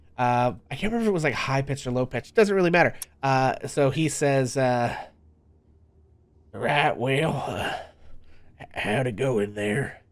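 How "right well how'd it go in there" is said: put-on elderly Southern man voice, slow. A game master voices a character for the players, in an old Southern man voice. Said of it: "it was an old Southern dude".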